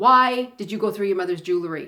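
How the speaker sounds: furious, loud, angry, demanding tone. Retelling how the father came downstairs accusing them: imitating an angry father. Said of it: "he was very angry".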